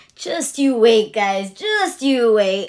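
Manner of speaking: acted, gleeful, taunting tease through laughter. Imagining a man watching fans react online, imitating teasing laughter. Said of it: "just laughing like".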